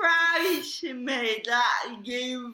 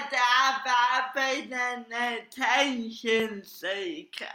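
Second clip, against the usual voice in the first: ordinary talk, nothing marked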